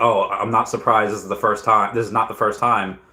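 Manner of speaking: plain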